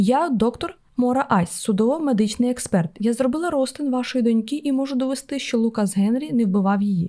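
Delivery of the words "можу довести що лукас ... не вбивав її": ordinary delivery, nothing marked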